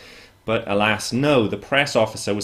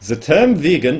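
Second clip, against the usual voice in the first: bad put-on German accent, higher and louder; 6 semitones higher, 6 dB louder than usual. Quoting a man's reply to your question, make a failed attempt at a german accent. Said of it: "sorry, I can't do a German accent".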